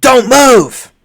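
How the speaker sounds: very high, top-of-the-lungs shriek. Narrating a scene, voice a character's warning, screaming at the top of her lungs. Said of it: "scream at the top of her lungs".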